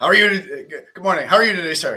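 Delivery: very loud, dead-earnest, polite delivery. Retelling how Tom greeted someone: imitating Tom asking all serious. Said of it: "He asks him, like, all serious".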